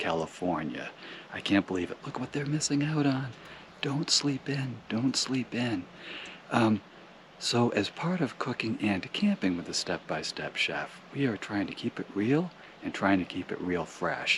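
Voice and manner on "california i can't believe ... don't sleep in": hushed, much quieter voice. Camp chef keeps it down while people still sleep at Convict Lake; speaking quietly. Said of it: "I'm being a little bit quiet".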